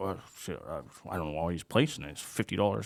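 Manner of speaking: acted muttering under breath. Retelling what the pit boss said under his breath: imitating someone muttering. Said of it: "under his breath, he was just like".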